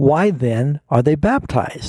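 very slow, high pitch, heavy stress on "why". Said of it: "I'll try and emphasize this in the right place".

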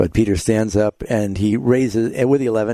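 ordinary delivery

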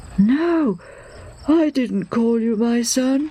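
sleepy, slow, drowsy just-woken voice. An old man answers the boy who came running to his room, sleepy. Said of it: "the old man says sleepily".

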